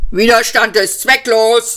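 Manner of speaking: barked, harsh delivery. A vogon guard dragging two captives answers them; barked. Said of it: "bellte der Posten".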